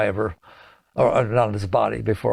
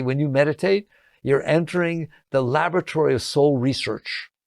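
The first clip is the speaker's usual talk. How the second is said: normal talking voice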